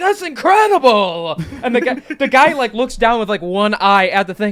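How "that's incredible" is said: imitated excited, amazed cheering. Describing players at a gambling table reacting to a lucky roll: imitating excited cheering. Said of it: "they're like".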